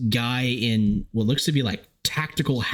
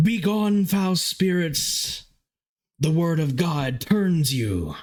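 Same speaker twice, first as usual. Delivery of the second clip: high-pitched male voice shouting at full cry; 7 semitones higher than usual. Voicing a man shouting at the far end of the hall: shouting male voice. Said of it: "you're hearing shouting at the other end".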